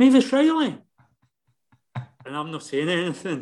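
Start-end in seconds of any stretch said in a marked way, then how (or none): 0.0-0.8 abrupt, sudden shout, very high, acted. Retelling how an arrested drunk man recognised him: imitating a drunk man shouting. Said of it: "and he shouts".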